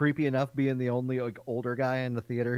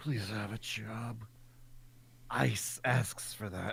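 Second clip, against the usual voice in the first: hushed, breathy, whispered creeper voice; 3 semitones lower, 10 dB quieter than usual. In a comedy bit, using the creeper voice. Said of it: "to do the creeper voice".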